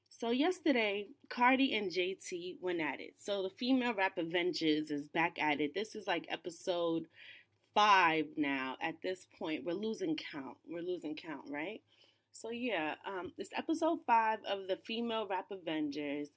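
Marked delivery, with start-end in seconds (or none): 10.6-11.5 softer, murmured under the breath. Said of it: "repeated line, softer echo".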